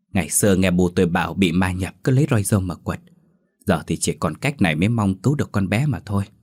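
usual speaking voice

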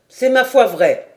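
contemptuous. A pikeman answers the tavern keeper while eyeing his opponent, contemptuous. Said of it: "en regardant son adversaire avec mépris".

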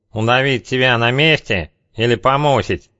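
put-on child-like, nasal voice. Narrator reads a two-metre thug's line to Zheka, childish nasal voice. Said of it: "его детской гнусавостью".

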